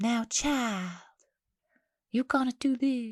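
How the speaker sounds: eerie, unsettling, creepy villain voice, slightly high. Discussing a story, voicing how Alpha would talk: Alpha impression. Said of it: "creepy. Creepy".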